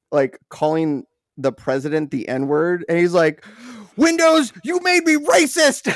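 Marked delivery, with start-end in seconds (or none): 3.9-5.9 shrill, very high-pitched screaming screech. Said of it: "he's just screaming".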